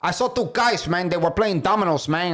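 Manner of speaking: put-on Bronx street accent. Friends trying out how some guys from the Bronx sound; put-on Bronx accent. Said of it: "I think they sound like this".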